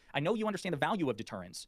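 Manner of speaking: ordinary talk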